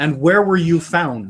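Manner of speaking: put-on American accent. Acting out a stage interrogation, leaning over the prisoner: American accent. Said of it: "in an American accent".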